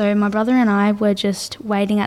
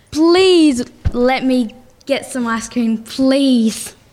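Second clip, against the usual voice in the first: mock pleading, slow and drawn-out begging; 3 semitones higher, 4 dB louder than usual. Retelling asking mum for ice cream from the van: imitating own begging. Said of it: "I begged my mum".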